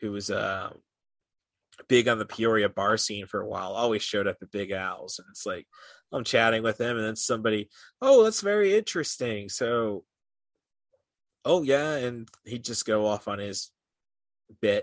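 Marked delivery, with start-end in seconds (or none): 8.0-12.0 chatty, put-on English accent, pitched up. Chatting with an English guy at Big Al's, copying his accent; imitating an English accent. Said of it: "I'm doing it in his accent".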